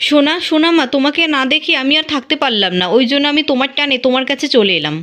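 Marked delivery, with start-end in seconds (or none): none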